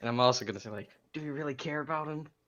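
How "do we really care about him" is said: pitched-up, loud stage whisper. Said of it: "just loud enough so the goblins can hear me".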